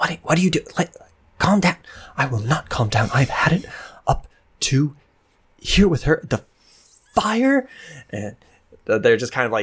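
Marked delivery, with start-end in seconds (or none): 0.0-7.7 hushed whisper, higher and slower. Narrating a game scene where two characters argue, hushed whisper arguing. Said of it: "hushed whisper arguing".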